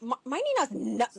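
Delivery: voice dripping with disgust. A mother quotes her daughter, imitating the disgust in her voice. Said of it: "she says it with disgust in her voice".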